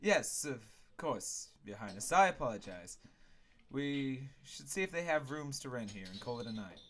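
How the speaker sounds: ordinary delivery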